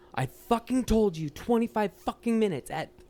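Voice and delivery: acted-out shrill, very high scream. Retelling screaming back at impatient restaurant customers: imitating someone screaming. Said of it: "I would start screaming back".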